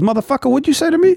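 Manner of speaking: very high-pitched Philadelphia man's voice. Imagining a philly guy answering an offer of crudité: imitating a philly guy. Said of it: "you pull up some Philly guy and say".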